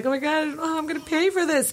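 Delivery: put-on high, distressed, tearful weeping outburst. Retelling arriving at the emergency room with a sick cat, imitating crying. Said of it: "I was crying like".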